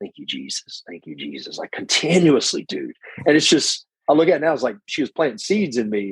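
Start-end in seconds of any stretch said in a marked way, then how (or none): 0.0-1.6 soft, hushed, steady half-whispered repetition. Retelling how grandmother prayed during the sermon: imitating someone half-whispering. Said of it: "she's just whispering".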